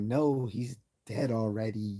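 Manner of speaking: put-on very slow speech with a slight Scottish accent. Retelling a scene where Scotty answers Kirk, in Scotty's little Scottish accent. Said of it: "in this little Scottish accent".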